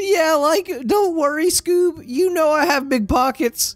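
very high cartoon voice. Voicing a character reassuring Scooby about food: Shaggy voice. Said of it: "my shaggy voice is becoming too Morty".

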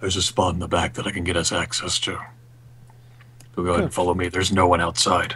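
soft, hushed, secretive half-whisper. Playing a character who gets closer to the group, half-whispering. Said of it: "he'll whisper".

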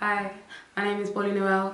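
very low, soft, husky voice. Introducing herself to the camera, in her husky camera voice. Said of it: "How's her voice gone all husky?".

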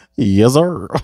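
put-on goofy, animated voice. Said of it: "He sounded like, like, like goofy".

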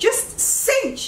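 high-pitched yelling.

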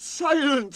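curt, sharp, very high, shrill snap. As engines hiss angrily, the controller snaps at them. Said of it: "snapped the Fat Controller".

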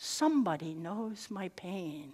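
soft, slow, drawn-out half-whisper. Retelling what a tearful woman half-whispered: imitating someone half-whispering. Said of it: "she whispered".

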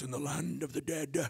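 low, deep, gravelly, raspy voice. Describing a Bible passage about the dead, deep, raspy voice. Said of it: "Just getting that deep, raspy voice".

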